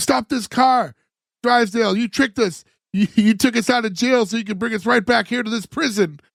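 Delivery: cross, worked-up tone with an angry edge. Retelling a TV scene where Jed yells at Drysdale, retelling Jed's angry yelling. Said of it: "Jed starts yelling".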